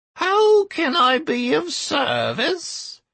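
very high, lazy, drawling gremlin squeak. A small gremlin at the bank greets a customer, drawling squeaky gremlin voice. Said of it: "The drawling and somewhat squeaky voice belonged to a small gremlin".

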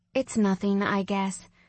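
plain

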